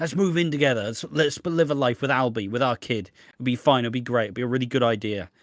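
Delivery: ordinary talk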